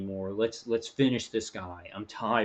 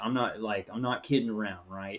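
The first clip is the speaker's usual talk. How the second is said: ordinary talk, nothing marked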